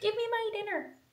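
very high, loud, bossy, demanding dog voice. Voicing a hungry dog demanding food: voicing the dog demanding dinner. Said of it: "she's like".

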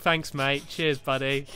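sarcastic, mocking tone. Streamer reacting to a tip that the trick is not to die, sarcastic thanks.

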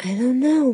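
hushed high half-whisper. Answering her father's question, half-whispered. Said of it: "Laura whispered".

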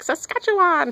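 very high pitch on "Saskatchewan". Imitating how Grover says a place name: Grover voice. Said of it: "like Grover does on Sesame Street".

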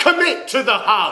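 high, very loud, top-of-the-lungs bellow. Retelling a hug in a crowded room, imitating Lenny Henry bellowing. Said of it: "bellowing at the top of his lungs".

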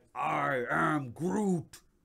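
put-on creaky, gruff, rough-edged voice, pushed out loud. Showing off collectibles, spotting a Groot: Groot impression. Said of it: "It's my Groot impression".

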